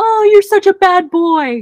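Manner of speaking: very high, loud, thrilled-sounding excited voice. Demonstrating how people talk to a misbehaving dog, excited tone. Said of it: "in an excited tone go".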